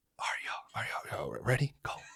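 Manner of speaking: breathy whisper under the breath. Retelling what was heard from downstairs at night: imitating people whispering. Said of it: "And so it's just whispering".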